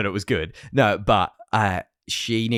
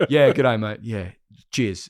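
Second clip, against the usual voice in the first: plain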